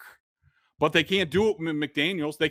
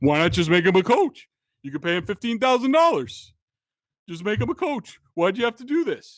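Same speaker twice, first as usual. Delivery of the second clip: pitched-up pundit voice, harping on; 5 semitones higher, 3 dB louder than usual. Retelling what Felger kept saying over and over: Felger impression. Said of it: "I love your Felger impression".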